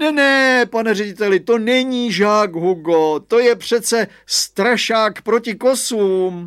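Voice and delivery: emphatic, high, drawn-out exclamation. Reading a story, the father calls out to the headmaster about Hugo; exclaiming.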